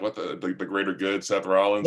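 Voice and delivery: ordinary talk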